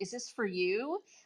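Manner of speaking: put-on coy, very flirtatious tone. Retelling David Justice asking if the autograph was for the speaker: imitating David Justice flirting. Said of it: "really flirtatious".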